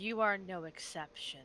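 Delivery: mild, gentle spoken delivery. Healing the wizard beside her in the fight: speaking very softly. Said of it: "say very softly".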